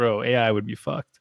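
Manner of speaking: ordinary talk, nothing marked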